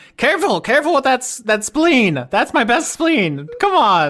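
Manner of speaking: shrill, high, loud squealing character voice. Voicing Denise through a swarm of Mephits following a player: Denise's voice. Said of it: "Denise's voice coming out of them".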